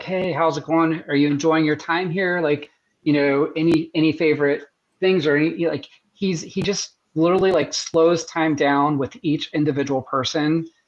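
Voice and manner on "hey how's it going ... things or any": ordinary talk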